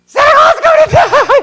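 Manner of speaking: full-throated, very high, very loud shrieking scream. Retelling bursting into an office during an audition: imitating own scream. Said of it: "I screamed".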